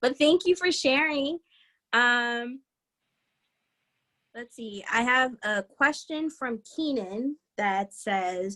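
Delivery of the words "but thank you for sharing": choked-up, high voice, holding back tears. Thanking a listener for sharing that they are doing better, holding back tears. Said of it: "I'm not gonna cry".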